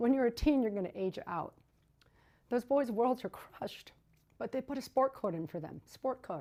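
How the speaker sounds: choked up, emotion catching in throat, voice breaking. Speaking live about teen boys in a children's home aging out, choked up. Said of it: "I can't even speak. I'm sorry. I'm going to get choked up".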